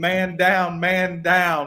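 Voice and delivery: very slow, stretched, drawn-out alarmed scream. Retelling being hit and falling during a riot: imitating own screaming.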